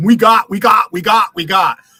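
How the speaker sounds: play-acted slow, derisive, mocking repetition. Mocking another speaker's repeated word: mocking someone's repeated words. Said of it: "how uneducated you sound when you use that word".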